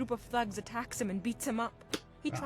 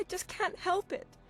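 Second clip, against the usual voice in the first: speaking while crying and sobbing; 8 semitones higher than usual. Begging for a stranger's attention while crying in public: crying while talking. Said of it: "Your sobbing is".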